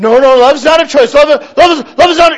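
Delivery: mock, high, loud, flustered protesting.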